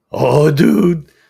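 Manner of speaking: slightly cracky voice. Pausing mid-answer to Jim's question in a video, with a slightly cracky voice. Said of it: "My voice is a little cracky".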